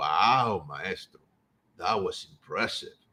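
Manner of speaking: very low, slow, wry, mildly sarcastic, "wow" drawn out. Retelling a police officer's reply after a demonstration: imitating a sarcastic compliment. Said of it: "With a little bit of, you know, uh, uh, sarcasm".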